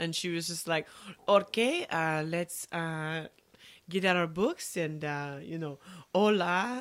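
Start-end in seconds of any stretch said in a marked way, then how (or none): 1.3-6.8 slow, put-on French accent. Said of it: "With, like, a French accent".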